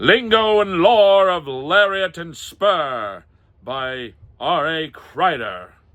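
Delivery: very slow, loud, drawn-out put-on old-time radio announcer. Reading book titles aloud, trying for a 1930s radio announcer voice. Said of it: "let me try my nineteen thirties. ... I'm trying to get that radio voice".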